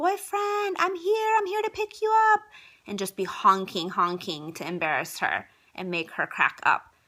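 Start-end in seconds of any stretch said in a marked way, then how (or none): 0.0-2.4 mock, very high-pitched, loud scream. Retelling shouting out while picking someone up: retelling a loud scream. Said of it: "really loud and scream out".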